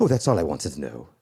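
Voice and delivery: put-on quaint, old-fashioned English accent. Recalling a college professor asking about next semester's classes, reply in his quaint Englishman voice. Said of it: "quaint Englishman".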